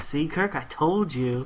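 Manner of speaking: ordinary talk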